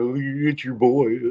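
very slow, stretched-out, drawn-out delivery. Answering a question about an impression: Mike Abraham impression. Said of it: "your best Mike Abraham impression".

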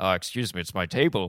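clumsy, bad put-on Irish accent. Retelling a bar story, a man finds someone at his table, in a bad Irish accent. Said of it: "we are both awful at Irish accents".

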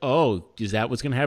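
ordinary delivery

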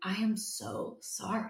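very slow, hushed, exaggerated heartfelt sympathy. Retelling a woman's reaction to the speaker's B-minus grade, mock overly sympathetic tone. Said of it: "put her hand over her heart and was like".

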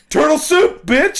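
very high, loud, shrill, full-throated piercing scream. Voicing the cook in a made-up story, slamming the lid: screaming. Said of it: "he screamed as he slammed the cauldron lid".

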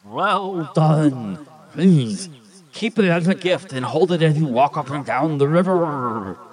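high, bubbling, watery, gurgling spirit voice. Game master voicing the river spirit speaking to the players: gurgling river spirit voice. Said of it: "I am the spirit of the river, ... Says the gurgling voice".

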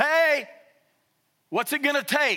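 play-acted high, loud shouting. Retelling a man calling out from the road to a veiled woman: imitating a yell. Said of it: "screams out, yells at her".

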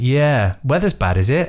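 pointed, sarcastic, swooping sing-song tone. Retelling a cabin crew member's remark about the diversion, mock sarcastic. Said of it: "she was being sarcastic".

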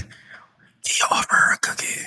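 very quiet, barely audible whisper. A character turns to the other rivals and asks, whispered. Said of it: "it was so quiet".

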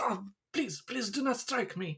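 very high, soft, pleading yelp. Voicing a disarmed man begging not to be hit: yelping plea. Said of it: "he yelps a little bit".

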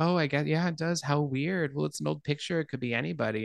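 acted, casual, dismissive, offhand brush-off. Retelling a film scene, a character's reply: imitating a dismissive reply.

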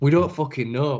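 ordinary talk

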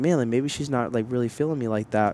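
ordinary delivery

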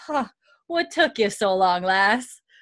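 amused voice, chuckling while speaking. Retelling a scene, voicing Murtagh's reply: chuckling Murtagh voice. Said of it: "he smirks and he just chuckles and he goes".

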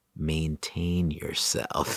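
very slow, soft, dead calm deadpan.

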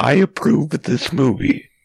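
robotic text-to-speech computer voice. Describing a computer talking for someone: Microsoft Sam voice. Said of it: "like Microsoft Sam being like".

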